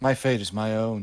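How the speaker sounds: ordinary delivery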